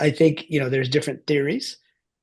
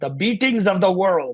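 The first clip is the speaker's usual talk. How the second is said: put-on Bengali accent, pitched up; 5 semitones higher than usual. Quoting a phrase Swami Yogananda used to say, in his Bengali accent. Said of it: "in his Bengali accent".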